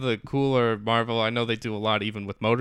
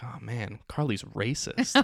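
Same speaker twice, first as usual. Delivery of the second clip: put-on quiet, low-volume delivery; 7 dB quieter than usual. Recounting their own reaction to a scene: retelling a quiet remark. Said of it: "I like said it quietly".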